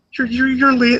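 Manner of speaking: very high, stumbling, starstruck delivery. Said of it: "Just Kermit, it's so adorable".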